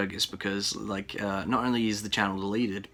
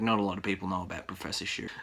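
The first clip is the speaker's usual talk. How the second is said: ordinary talk, nothing marked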